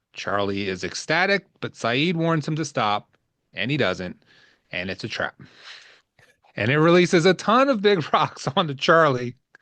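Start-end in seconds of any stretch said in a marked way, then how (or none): 6.6-9.3 words broken up by laughter, pitched up. Recapping a scene with Charlie and Saeed, laughing while talking. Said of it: "sorry, I'm laughing".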